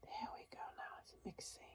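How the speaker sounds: very quiet, hushed, breathy, barely voiced whisper. Mixing paint and talking to viewers while playing with colors, whispering. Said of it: "I don't know why I started whispering".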